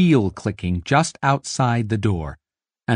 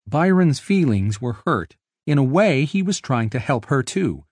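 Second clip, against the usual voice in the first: ordinary delivery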